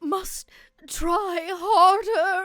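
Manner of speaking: posh upper-class voice. In a game, a posh voice inside a possessed creature fights back: posh voice. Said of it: "kind of posh voice is fighting it".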